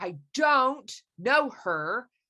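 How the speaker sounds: "don't" heavily stressed, as if in capitals. Explaining putting a word in all caps, stress on don't. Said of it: "I would put don't in all caps with an angry face".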